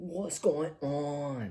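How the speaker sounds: put-on English accent. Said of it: "So that's my English accent".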